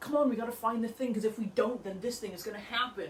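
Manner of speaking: mock affected, insincere, put-upon acting voice. Imitating how a man talked, the speaker uses a put-upon disingenuous voice. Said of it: "that very put-upon voice that sounds very in- disingenuous".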